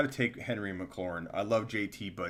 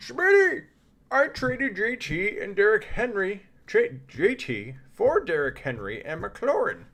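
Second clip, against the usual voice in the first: very high, very loud, shrill, swooping put-on voice; 13 semitones higher, 9 dB louder than usual. Acting out a message about a player trade, imitating someone's voice. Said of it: "Let me do the voice".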